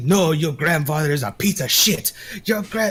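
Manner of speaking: put-on high-pitched, drunken, squabbling bickering voice. Voicing drunk dwarves bickering back and forth: drunk dwarves bickering. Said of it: "they're just bickering back".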